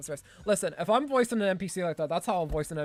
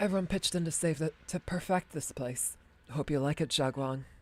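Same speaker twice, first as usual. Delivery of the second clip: put-on elderly woman character voice. Voicing a character in a story, gray-haired woman voice. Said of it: "I'll give her more of a gray sounding voice".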